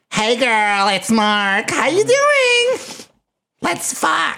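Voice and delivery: very high, swooping, sing-song, lingering, stretched-out delivery. Playing back another speaker's introduction: imitating Mark's voice. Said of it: "let me play that back for you".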